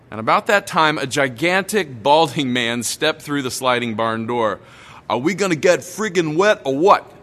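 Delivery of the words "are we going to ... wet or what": put-on big, rowdy bellowing in Brooklyn accent. Retelling a man stepping through the barn door, bellowing in a brooklyn accent. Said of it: "he bellowed in this boisterous Brooklyn accent".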